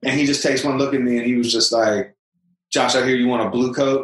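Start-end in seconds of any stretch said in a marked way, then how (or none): 2.7-4.0 choppy, halting, non-native broken English. Retelling what the tailor said on seeing him: imitating Hermano's broken English. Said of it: "in his, like, broken English".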